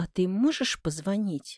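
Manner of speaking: hopeful, expectant tone. Told the repair must wait for parts, the narrator asks the man; hopeful question. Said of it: "спрашиваю с надеждой".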